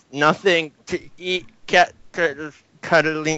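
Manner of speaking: high, agonized, pained monster shriek. Voicing a player's monster as it is hurt, screaming in pain. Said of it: "the monster of his starts screaming in a lot of pain and says".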